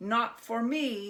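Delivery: high, loud, fed-up, unhappy goblin voice. Narrator reading a Hanukkah story, the goblin leaving Herschel; unhappy goblin voice. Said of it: "This one had fiery red face and 2 enormous horns. / This one had fiery red face and 2 enormous horns. / He was very unhappy about losing his money".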